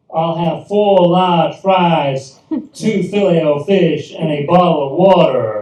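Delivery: bad, loud, slow, fake put-on American accent. Retelling ordering at a drive-up machine for the first time: put-on american accent. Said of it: "put on my very best American accent".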